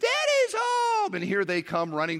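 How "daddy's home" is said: put-on very high, squealy little girls' squealing cry. Coming home from the office as the girls greet him, imitating squealing girls' voices. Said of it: "I hear these sort of squealing girls' voices".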